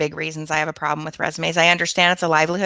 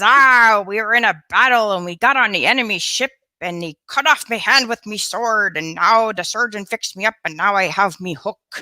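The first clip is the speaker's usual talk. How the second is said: put-on pirate voice, higher; 4 semitones higher than usual. Telling a pirate joke, voicing the pirate: pirate voice. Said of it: "He says".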